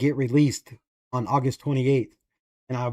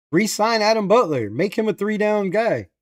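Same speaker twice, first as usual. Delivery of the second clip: mock, high-pitched, insistent screaming; 7 semitones higher than usual. Retelling an old demand to re-sign a player: imitating own past screaming. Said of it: "I was screaming".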